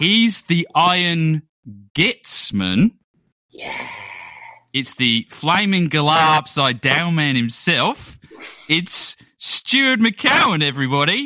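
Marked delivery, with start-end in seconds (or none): 4.7-11.3 convincing, well-done put-on Australian accent. Podcast host introducing a guest, in a put-on australian accent. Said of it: "I was very surprised how good that Australian accent was".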